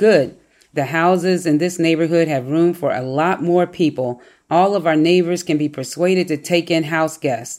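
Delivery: plain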